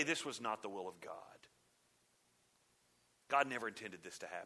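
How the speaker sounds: soft, glib, smug, self-satisfied, rattled-off delivery. Mimicking the church after something bad happens: mock-smug false claim. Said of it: "we run out real smugly and falsely say".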